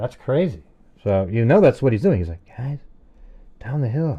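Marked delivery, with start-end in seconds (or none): 2.6-4.2 deliberately lowered, hushed voice, barely above quiet. Showing others how a man avoids making a loud noise, imitating a lowered voice. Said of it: "He doesn't want to make a loud noise".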